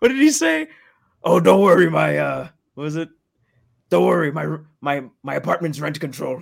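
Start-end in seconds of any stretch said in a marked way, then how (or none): 3.9-6.4 put-on puppet monster voice. Friends joking about Sesame Street, one does a Cookie Monster voice. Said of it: "Cookie Monster voice".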